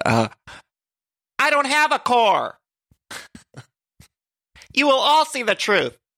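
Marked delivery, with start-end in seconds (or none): 1.4-5.9 very high, dramatic, grand-sounding delivery. Trying again to imitate a reality show cast member: Shannon impression. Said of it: "let me try to do my Shannon impression".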